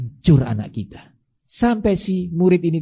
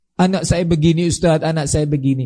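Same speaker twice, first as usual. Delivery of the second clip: ordinary talk, nothing marked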